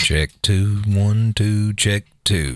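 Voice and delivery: on-air radio announcer voice. Doing a mic check at the start of a radio show; soft radio voice. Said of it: "Are you going to talk that soft?".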